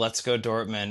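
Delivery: ordinary delivery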